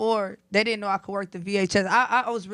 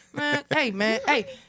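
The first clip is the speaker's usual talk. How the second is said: put-on barking voice, higher pitch; 4 semitones higher than usual. Imitating a friend who barks in his ear when confidence is shaky: imitating a friend barking. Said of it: "that man will bark in my ear".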